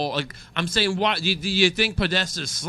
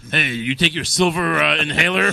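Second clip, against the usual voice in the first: mock commercial ad voice, louder; 2 semitones lower, 5 dB louder than usual. Acting out the commercial that a clip cuts to: imitating a commercial. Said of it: "it cuts to commercial".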